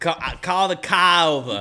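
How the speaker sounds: put-on Boston accent. Joking with friends about Boston people using Siri, in a Boston accent. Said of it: "I'm talking about Boston people".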